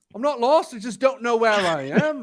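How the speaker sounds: put-on Liverpool Scouse-accented delivery. Retelling a man's joke from the back of the coach, in his liverpool accent. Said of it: "like his Liverpool accent".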